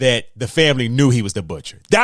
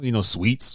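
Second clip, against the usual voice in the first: usual speaking voice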